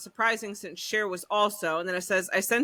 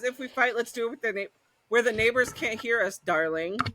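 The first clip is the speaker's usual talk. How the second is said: ordinary talk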